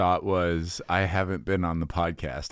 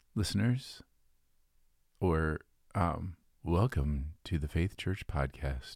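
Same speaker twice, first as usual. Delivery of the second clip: calm, soft, hushed radio-host voice; 6 dB quieter than usual. Showing how a podcast could open, calm NPR voice. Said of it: "calm NPR voice".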